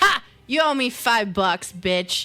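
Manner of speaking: loud, taunting tone in a character voice. Voicing Grin gloating after a bet is won: voicing Grin. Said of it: "You hear Grin go".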